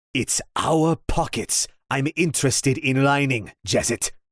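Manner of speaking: hissed words. Jaren steps toward jezit, sword in hand, and answers him: hissing. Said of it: "he hissed".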